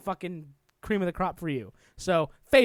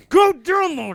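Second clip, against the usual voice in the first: very loud, very high-pitched shout; 9 semitones higher, 9 dB louder than usual. Urging another speaker to download a game: yelling. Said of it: "Why are you yelling?".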